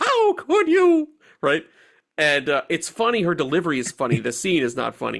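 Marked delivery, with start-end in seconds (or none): 0.0-1.1 very high, shrill cartoon damsel cry. Retelling how an actress delivers her line in a scene, in an Olive Oyl voice. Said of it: "a very olive oil Popeye kind of way".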